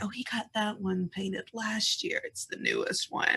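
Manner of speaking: hushed, very quiet whispered aside. Voicing a character telling another about a portrait: whispering in character. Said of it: "you sort of hear her whisper".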